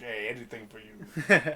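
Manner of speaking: low, slow, begrudging tone. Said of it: "Preston obliges begrudgingly".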